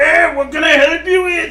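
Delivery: put-on very high, very loud elderly old man voice. Voicing an old man whom the players are led over to: old man voice. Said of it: "As they lead you over to the old man".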